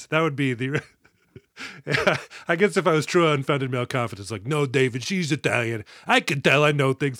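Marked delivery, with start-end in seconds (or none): 4.5-7.2 put-on heavy New York accent. Joking about unfounded male confidence, the speaker slips into a heavy NYC voice. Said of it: "That's my NYC heavy voice?".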